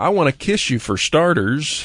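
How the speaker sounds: normal talking voice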